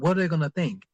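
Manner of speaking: ordinary talk, nothing marked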